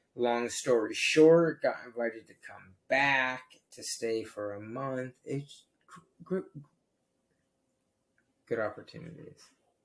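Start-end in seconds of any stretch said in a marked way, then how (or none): 5.2-9.4 quick, breathy stutter, tripping over words. Recounting a trip story, stuttering. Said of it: "Sorry for the stutter".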